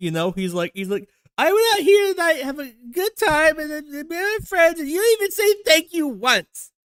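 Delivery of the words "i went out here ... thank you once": put-on very high, raised, slightly drunk woman's voice. Mocking how Vance sounds, imitating Vance as a tipsy woman.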